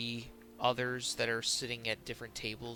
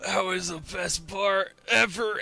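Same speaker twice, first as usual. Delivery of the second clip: put-on loud, high, drunken sailor voice, blurted out; 8 semitones higher, 9 dB louder than usual. Narrating a scene, voicing sailors coming out of a bar, drunk voice. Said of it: "looking as disheveled and drunk out of their minds".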